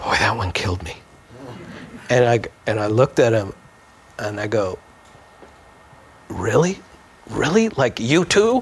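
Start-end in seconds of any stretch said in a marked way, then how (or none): 0.0-1.0 mutter under breath, lower and faster. Retelling what a co-performer said during a show, under his breath. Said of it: "I heard Gilbert under his breath go".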